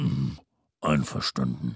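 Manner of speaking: grumbling. Agreeing that the boy can only stay until seven: grumbling. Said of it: "brummte der Weihnachtsmann".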